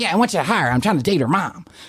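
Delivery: casual barroom buddy talk. Retelling how the bar regular told him whom to hire: imitating Tommy's voice. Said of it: "he's talking like this".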